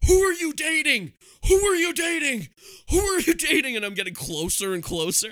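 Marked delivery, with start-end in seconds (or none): 0.1-3.7 very high, shrill, loud, repeated screeching scream. Retelling shouting at a star passing reporters: retelling a scream. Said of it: "I'm screaming over and over again".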